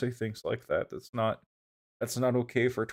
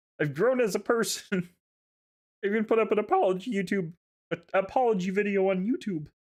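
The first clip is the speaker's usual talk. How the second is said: put-on frog puppet character voice; 9 semitones higher than usual. Voicing Uncle Flapple inviting kids onto his yacht: Kermit voice. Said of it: "made him turn into Kermit".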